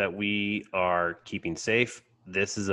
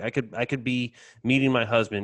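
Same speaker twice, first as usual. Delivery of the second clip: mock-tearful, put-on crying voice; 3 semitones higher than usual. Retelling a moment where a woman comes in, imitating someone crying. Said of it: "she's crying and saying like".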